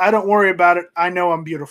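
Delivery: plain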